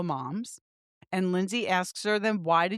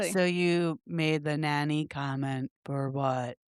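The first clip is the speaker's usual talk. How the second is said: low, dull, slow, flat droning monotone; 4 semitones lower than usual. Retelling a group argument, quoting Lexi in her dull monotone voice. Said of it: "in her dud monotone voice".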